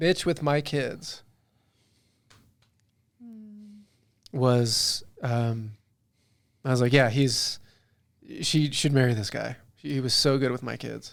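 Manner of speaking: heartfelt, emotional, moved, welling-up delivery. Speaker in a conversation with others, getting emotional. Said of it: "oh I'm getting emotional".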